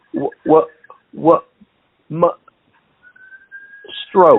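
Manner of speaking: slow, halting, broken, stumbling speech. Retelling how a friend answered the phone after a stroke: imitating someone barely able to talk. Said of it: "he could barely talk".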